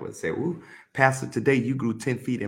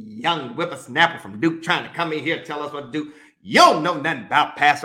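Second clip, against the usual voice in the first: furious, angry, ranting tirade; 4 semitones higher, 5 dB louder than usual. Retelling how a visitor went off on the speaker: imitating someone going off angrily. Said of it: "he was going off on me".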